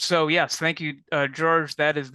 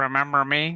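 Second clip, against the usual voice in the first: put-on airplane character voice. Performing the plane coming back after being asked: Concorde coming back impression. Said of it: "do your impression of it coming back".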